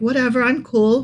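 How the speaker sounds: put-on casual, nonchalant, cool-sounding tone. Admitting embarrassment and playing it off: fake nonchalant. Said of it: "play it off like".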